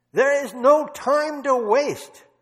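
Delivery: put-on loud, high-pitched Dutch accent, pushed out. Speaker retelling how Corrie boldly prayed before the Lord, Corrie's Dutch accent. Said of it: "That was her Dutch accent".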